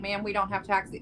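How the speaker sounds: ordinary delivery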